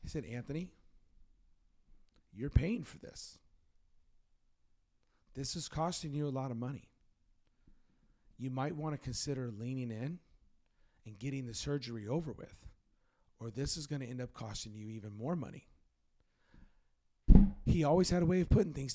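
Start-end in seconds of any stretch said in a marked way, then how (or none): 0.2-15.7 calm, soothing voice. Retelling what the pastor said after a therapy session: Pastor Ron's voice, calm and soothing. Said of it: "Pastor Ron's voice, real calm, real soothing".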